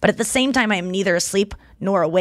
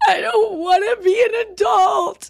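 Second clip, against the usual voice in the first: put-on very high little girl voice, slowly sobbing; 12 semitones higher than usual. Retelling a video of a little girl crying: imitating a sobbing girl. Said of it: "she's sobbing".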